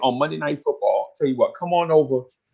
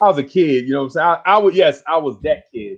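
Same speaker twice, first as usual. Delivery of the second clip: ordinary talk, nothing marked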